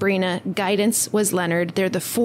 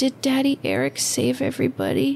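sweetest, saddest small voice, sing-song, pitched up; 6 semitones higher than usual. Retelling what she asked Andrew after taking off her headphones, imitating the sweetest, saddest little voice. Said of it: "In the sweetest, saddest little voice".

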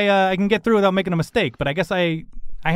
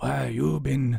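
mock menacing voice, lower and quieter; 6 semitones lower, 7 dB quieter than usual. Trying a scary voice on request before breaking off: put-on scary voice. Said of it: "Would it help if I put on a scary voice for you?".

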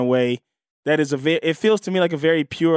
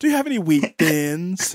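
smarmy, slick, charm laid on thick. Doing a Chuck Bass impression in a contest: swarmy Chuck Bass impression. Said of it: "My Chuck Bass impression is a, a, more swarmy".

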